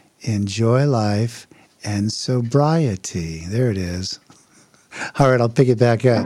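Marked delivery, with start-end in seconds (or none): 0.2-3.5 very slow, deliberately drawn-out words. Speaker opening a talk about recovery and sobriety, talking really slow. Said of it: "I'm going to try to talk really slow".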